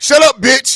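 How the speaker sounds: rude, dismissive tone. Teasing a friend by mimicking how he said sorry: imitating a rude tone. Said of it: "The tone in your voice, though, was like".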